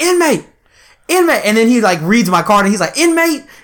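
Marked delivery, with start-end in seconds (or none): 0.0-1.5 very high-pitched, sergeant-style calling-out yell. Telling a prison story, imitating the sergeant yelling after him as he walks off. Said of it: "he's yelling after me".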